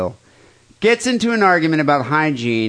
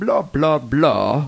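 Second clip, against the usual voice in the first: fake, put-on English accent attempt. Trying out a line from a listener letter: put-on English accent. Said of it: "how you say that in, uh, with an English accent".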